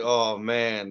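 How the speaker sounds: ordinary talk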